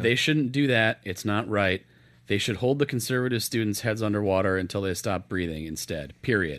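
ordinary talk, nothing marked

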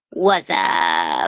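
bad, terrible commercial-style ad voice. Opening the episode with a quick greeting: terrible Budweiser commercial impression. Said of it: "That was a terrible impression of the Budweiser commercial".

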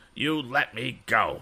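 insistent, demanding tone. A bully held in a tight grip orders his captor: demanding. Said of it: "demanded Andy".

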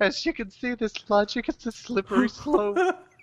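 put-on stupid-sounding voice, pitched very high. Suggesting a comedy bit about ranting a conspiracy theory, in a stupid voice. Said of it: "It's just a stupid voice".

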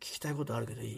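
solemn small voice, very low, hushed, quick murmur. Retelling a classmate's question to him, imitating a classmate's small voice. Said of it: "神妙な表情で僕に小声で".

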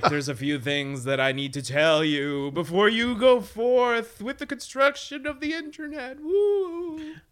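very high, eerie, spooky ghost voice. Acting out a time traveler speaking to the internet's builders: spooky ghost voice. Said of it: "I don't know why I'm suddenly a ghost".

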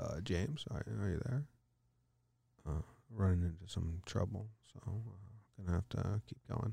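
barely audible, very quiet, low ASMR murmur. Retelling a phone call with a support agent, imitating his soft ASMR-style voice. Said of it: "like he was doing an ASMR podcast".

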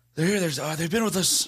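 high-pitched, exhausted, weary impression voice. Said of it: "best Biden impression".

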